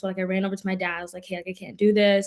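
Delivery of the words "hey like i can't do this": acted tearful sobbing, bawling. Recalling running over to their dad at an early college camp: retelling crying and bawling. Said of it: "crying and bawling".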